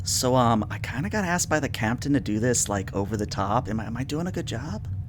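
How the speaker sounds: hushed, half-whispered voice. Retelling what a man added out of character, in a half-whisper. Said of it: "he adds in a whisper".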